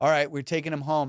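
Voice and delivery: plain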